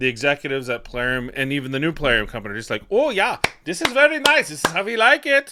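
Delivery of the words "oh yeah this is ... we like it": put-on German accent, very high and raised. Voicing the game company's executives' reaction, in a German accent. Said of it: "I don't know why I did a German accent".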